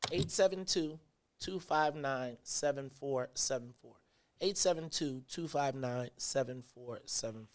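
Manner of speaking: very slow, quiet delivery. Host gives listeners the call-in number before opening the phone lines, reading very slowly. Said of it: "I'm going to read the number very slow".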